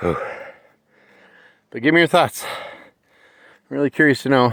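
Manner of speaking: out of breath. Just back from a short walk, asking listeners for their thoughts, out of breath. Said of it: "I apologize for being so out of breath".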